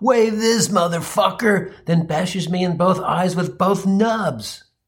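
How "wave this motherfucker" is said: rowdy war-cry yell, pitched high. Retelling how a man with no hands shouted while attacking: imitating someone shouting. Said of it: "Nubby shouts".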